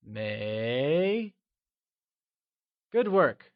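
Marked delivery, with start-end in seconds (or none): 0.1-1.3 may with pitch climbing from mid to high. Tone lesson, modeling the word after practice: mid-rising tone on may. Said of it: "It is said with a mid-rising tone, like may".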